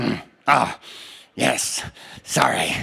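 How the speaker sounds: very slow, rough, creaky, raspy, drawn-out drawl. Retelling the director apologizing after putting down the bayonet: imitating Nigel's raspy voice. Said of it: "he used to talk like this. He had this incredibly kind of raspy voice".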